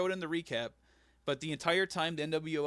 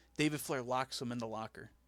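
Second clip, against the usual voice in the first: usual speaking voice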